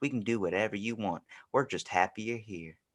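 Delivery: soft sweet put-on voice. Pitching what the voice of Wendy's should sound like, soft, sweet Wendy's voice. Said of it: "something soft and sweet".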